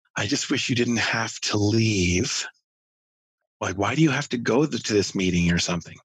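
put-on choked-up child voice, tight throat. Retelling a daughter's words while being carried, imitating a choked-up child. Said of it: "through sort of choked up".

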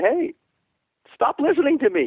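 very high shouted yell. Retelling yelling at a rider in the middle of the course: imitating own past yell. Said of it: "I'll yell at him and I'll say".

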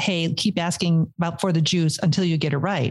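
ordinary talk

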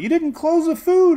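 very high, shrill yelling outburst. Recounting a woman yelling at someone after finding a rat: retelling someone's yell. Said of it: "she yells at Emily".

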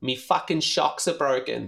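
put-on, strung-out voice with Australian accent. Quoting a man, the speaker does an Australian junkie voice. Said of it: "That's an Australian junkie voice".

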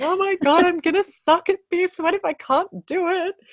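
loud, high crying panic. Retelling crying in the kinesiologist's office at lunch break, imitating their own crying. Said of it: "I've been in her office in the lunch break crying".

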